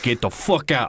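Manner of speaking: put-on angry Italian mobster voice. Retelling how a restaurant guy threatened a streamer: imitating an angry Italian mobster. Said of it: "he's like this Italian guy".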